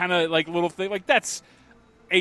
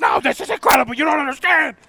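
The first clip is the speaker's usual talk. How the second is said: put-on scream, higher and louder; 10 semitones higher, 7 dB louder than usual. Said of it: "screaming at him".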